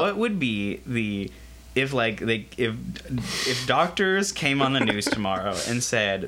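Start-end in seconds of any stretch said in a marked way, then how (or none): none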